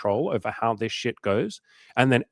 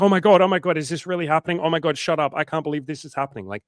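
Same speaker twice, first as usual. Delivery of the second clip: put-on loud, gushing, thrilled, disbelieving excitement; 5 semitones higher, 5 dB louder than usual. Retelling a woman's reaction to being hit on: imitating Molly freaking out happily. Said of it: "freaked out in a good way".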